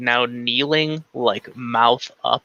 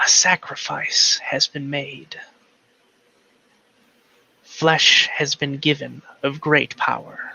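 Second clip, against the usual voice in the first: many voices together in a stage whisper. Narrator voices the voice heard after the necromancer's skull tilts: whispering of many voices. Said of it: "a whispering of many voices".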